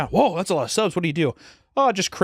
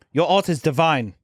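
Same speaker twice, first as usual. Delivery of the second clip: put-on German accent in English; 2 semitones higher than usual. Speaker retelling what a woman says to them about their art, put-on German accent. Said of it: "I'm going to say German".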